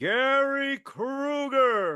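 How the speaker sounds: name called high, loud, drawn out. Retelling how an announcer said a name in the credits: imitating Don Pardo saying the name. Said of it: "The next week".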